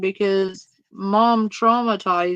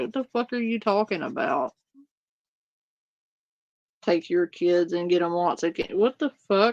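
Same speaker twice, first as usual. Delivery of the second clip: confused, disbelieving tone; 3 semitones lower, 5 dB quieter than usual. Retelling how a man answered a stranger: imitating a confused reply. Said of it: "you could tell in his voice".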